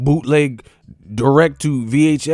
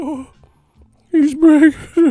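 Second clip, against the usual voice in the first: ghostly put-on voice, higher and louder; 5 dB louder than usual. Talking about boxers begging to fight, in a ghost voice. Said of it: "why you sound like a ghost".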